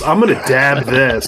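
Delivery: mocking, put-on addict voice. Mocking another speaker's hot sauce talk: imitating a hot sauce drug user. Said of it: "sounds like he's doing drugs with hot sauce".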